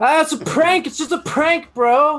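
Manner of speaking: very high, loud, flustered, defensive backpedaling tone. Announcing it first, the speaker does an impression of QAnon after getting caught. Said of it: "my impression of QAnon after getting caught".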